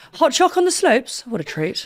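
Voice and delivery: radio advert announcer voiceover. Asked about the radio voice, recalling ads the speaker voiced: advert voiceover voice. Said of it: "I had to do the Sensodyne ad".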